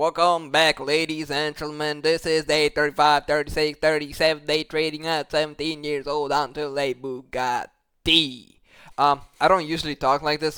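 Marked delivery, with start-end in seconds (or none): 0.0-8.6 put-on Midwestern accent played for laughs. Opening his trading video intro to viewers, Midwestern accent. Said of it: "do a intro with a Midwestern accent".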